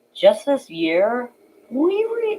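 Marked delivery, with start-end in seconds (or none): 1.7-2.4 voice cracks up very high. Presenting the story of the bus fleet, voice cracking. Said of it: "my voice cracked so bad".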